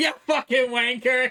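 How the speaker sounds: loud screaming, loud yelling. Imitating someone screaming at staff in front of a celebrity guest: imitating someone screaming at staff. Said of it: "screaming at his st-".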